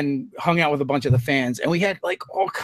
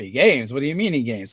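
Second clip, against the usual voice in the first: put-on taken-aback, surprised double-take repeat; 3 semitones lower, 3 dB quieter than usual. Retelling how a church choir member reacted on hearing about gaming: imitating surprised question. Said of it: "his eyebrow shot up".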